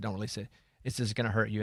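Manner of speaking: ordinary delivery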